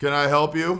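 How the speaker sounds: acted, bored, disinterested clerk voice. Retelling a call to a store's photo department, imitating the clerk's disinterested tone. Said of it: "just a disinterested tone of voice".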